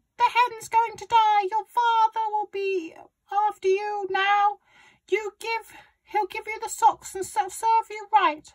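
high-pitched, shrill, really loud shout. Narrator reads Grandma scolding the boy beside the sick hen, shouting. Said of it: "Grandma shouted".

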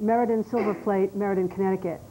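plain

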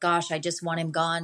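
plain

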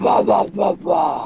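low, wailing voice. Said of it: "You sound like a dying senator".

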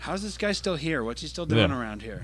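ordinary talk

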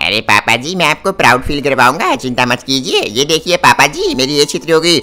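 boastful character voice.

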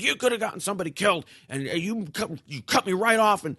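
mock high yell. Retelling what an angry driver said at a stoplight: imitating someone yelling. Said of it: "he started yelling at me again".

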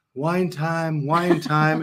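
gentle, very soft, slow voice. Retelling the call at the end of the workday, imitating Shelley's very soft voice. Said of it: "with her very soft voice".

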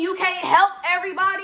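put-on passionate, assertive old man voice, high, loud, forceful.

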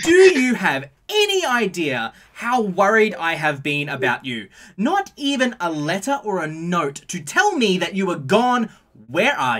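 full-throated, shrill, very loud swooping yell. Retelling a woman scolding someone who ran off: acting out a woman yelling. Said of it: "she's yelling at the top of her voice".

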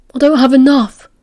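groaning. Remus answers Castor, slumping back: groaning. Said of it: "Remus groaned".

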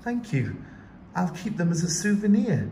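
happy, glad, high, lilting sing-song. Reading a story, a girl answers another character's question, saying it happily. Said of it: "Yunhai said happily".

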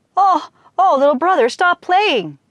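very high, begging, pleading cry. Narrating a folk tale, the exhausted dragon speaks to the boy playing music: pleading. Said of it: "he pleaded".

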